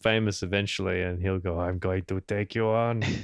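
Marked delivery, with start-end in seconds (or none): 1.6-3.0 put-on European accent. Imagining what a man will say once the podcast is famous: put-on European accent. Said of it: "He'd just be an American accent, wouldn't it?".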